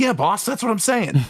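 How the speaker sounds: squeaky, very high, thirties-style henchman voice. Playing a minion answering the boss, in a 1930s minion voice. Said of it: "nineteen thirties minion voice going".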